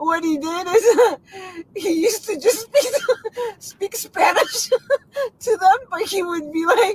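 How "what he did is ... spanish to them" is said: slow speech through bursts of laughter. Telling a story about speaking Spanish: laughing while talking. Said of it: "That Kamala laugh, man".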